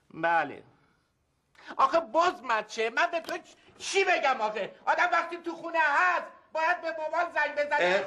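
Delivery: high-pitched, loud yelling. At home, telling someone off about calling Dad, shouting. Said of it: "خب چرا داد میزنی؟".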